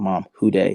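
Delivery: tearful, crying speech. Retelling calling mom with news of signing: retelling own tearful words. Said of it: "with tears in my face and I just say".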